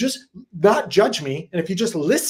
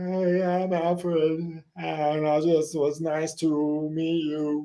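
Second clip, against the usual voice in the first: soft, odd, dopey, dim-sounding character voice; 5 dB quieter than usual. A character introduces himself to another, in Alfred's odd voice. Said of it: "What's wrong with your voice, Alfred?".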